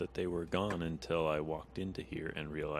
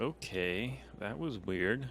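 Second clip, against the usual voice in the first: slow, mumbled aside to oneself; 4 semitones higher than usual. Reacting in character after a woman vanishes into a tree: mumbling under breath. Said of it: "I mumble under my breath".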